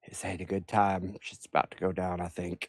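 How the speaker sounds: very quiet, hushed speech. Answering a ringing phone in character, speaking real quiet. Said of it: "I'm gonna say real quiet".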